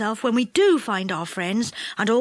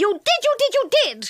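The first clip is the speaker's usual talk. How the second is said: angry, furious shout, higher; 11 semitones higher than usual. Reading a story aloud, voicing a character in a fierce quarrel: angry yell. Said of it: "yelled an angry voice".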